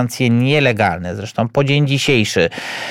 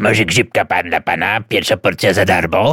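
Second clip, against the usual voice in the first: low, hoarse, rasping voice; 4 semitones lower than usual. Speaker mocks a claim about a woman approaching american tourists, in hoarse voice. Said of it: "zachrypniętym głosem nie mówiła".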